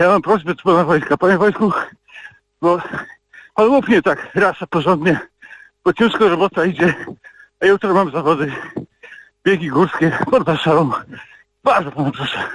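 breathless panting voice. Caller phones the station while running, asking Mr. Wojtek for a favour, out of breath. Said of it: "Przepraszam, że dyszę, ale biegam".

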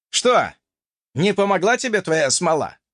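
scornful, contemptuous snorting jeer. Reading a player mocking the narrator who just got eaten: contemptuous snort. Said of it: "презрительно фыркнул".

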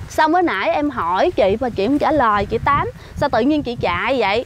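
ordinary talk

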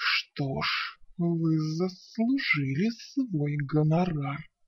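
hissed, sibilant, hissing dragon voice. Narrator reading the dragoness's reply after she gets her treasure back, hissing dragoness. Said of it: "прошипела она".

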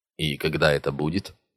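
ordinary delivery, nothing marked

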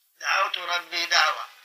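ordinary talk

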